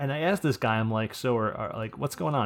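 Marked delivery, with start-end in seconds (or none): none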